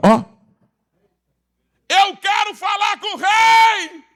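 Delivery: put-on very high cry, stretching rei. Telling a story where a woman at the back of the line calls to the king, retelling a woman shouting. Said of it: "a mulher gritou lá no final da fila".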